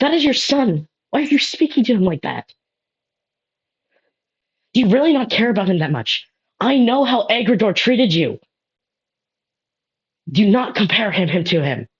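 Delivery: slight hint of anger. Narrating a story, reading Scale's line, with a slight hint of anger. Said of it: "you see a slight hint of anger".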